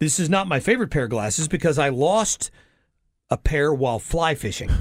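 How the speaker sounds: ordinary talk, nothing marked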